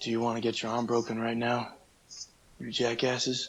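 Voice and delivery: tough-guy action-star voice, hard man. Challenged to prove your impressions to two people judging you, do a Steven Seagal impression. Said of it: "do Steven Seagal".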